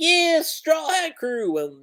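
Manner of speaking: play-acted, very high, drawn-out cheering. Describing a comic panel where agents cheer: imitating agents cheering.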